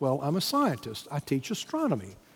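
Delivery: play-acted, rather proud, swooping delivery. Retelling a scientist's answer about his job: imitating a proud tone. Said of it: "he said rather proudly".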